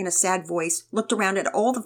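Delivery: plain reading voice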